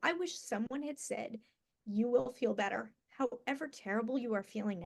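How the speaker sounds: tearful crying, voice cracking and breaking. Recalling a time of feeling terrible, the speaker talks while crying. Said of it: "I can't even say this without crying".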